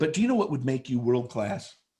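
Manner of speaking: ordinary talk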